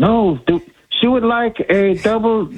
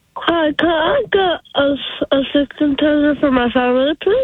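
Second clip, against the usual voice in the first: cartoon alien voice, much higher; 7 semitones higher than usual. A daughter takes the phone to do her Stitch impression. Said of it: "my daughter does a really good Stitch impression".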